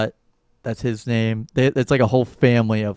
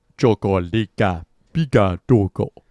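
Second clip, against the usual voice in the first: babbled alien nonsense gibberish. Picturing an actor as Jabba's son, the speaker tries out a line: Jabba the Hutt impression. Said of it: "That's my Job of the Hut impression".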